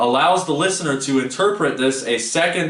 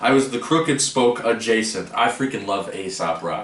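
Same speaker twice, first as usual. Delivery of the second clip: normal talking voice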